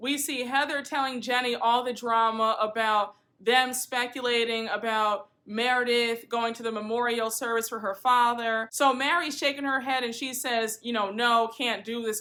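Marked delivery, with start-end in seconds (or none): 11.1-12.2 put-on muttering under breath. Retelling a scene where someone shakes her head: imitating muttering under breath. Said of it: "under her breath".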